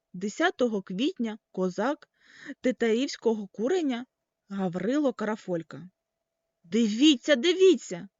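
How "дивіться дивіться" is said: loud, joyful, delighted shout. Narrator reads Papusha's cry on finding the inscription, shouting with delight. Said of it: "захоплено кричав Папуша".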